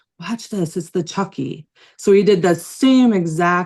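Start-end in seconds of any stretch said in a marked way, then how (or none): 0.2-1.7 hushed, close whispered aside. Retelling words someone whispered into the speaker's ear: imitating a whisper. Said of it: "he did whisper in my ear".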